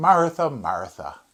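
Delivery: mildly fed-up, slightly exasperated tone. Reading Jesus's words to Martha, Jesus sounding exasperated. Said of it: "I've read it myself this way, where Jesus sounds a little exasperated".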